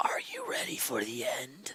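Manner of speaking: menacing, very quiet, breathy whispered hiss. A storyteller voices a strange man in the scene, hissing. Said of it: "The man hisses out of his mouth".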